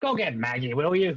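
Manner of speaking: high, loud, hollering gnome voice. In the scene, the gnome calls out to the others: yelling gnome. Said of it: "the gnome yells out".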